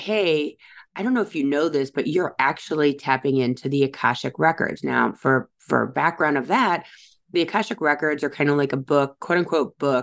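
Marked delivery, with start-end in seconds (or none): none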